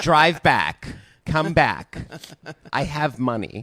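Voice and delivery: very slow, drawn-out put-on girly voice. Doing an impression of another speaker in a girl voice. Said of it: "I'm doing an impression of you".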